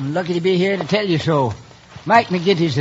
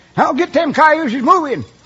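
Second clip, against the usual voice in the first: high-pitched, loud hollering; 9 semitones higher than usual. Retelling a holdup to a questioner: imitating someone yelling. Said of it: "the first voice yells".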